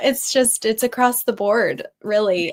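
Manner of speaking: speaking through laughter. Answering a question from the other speaker, laughing while talking. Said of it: "Sorry, I'm laughing because".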